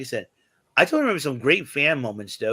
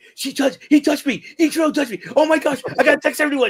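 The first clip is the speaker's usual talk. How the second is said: put-on excited girl freaking out, much higher, louder; 7 dB louder than usual. Retelling a girl Ichiro ran into at a Mariners game, imitating her excited freakout. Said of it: "she was like really excited, but she was like freaking out".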